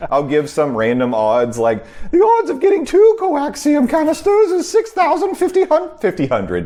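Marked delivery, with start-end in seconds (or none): 2.1-6.7 very high, fussy, swooping put-on robot voice. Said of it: "This is me being C three, my best C three P O".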